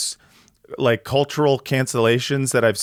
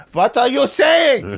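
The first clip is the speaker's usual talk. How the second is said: very high-pitched put-on German accent; 11 semitones higher, 4 dB louder than usual. Acting out a quote, speaker says he has to do the accent. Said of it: "I have to do the accent".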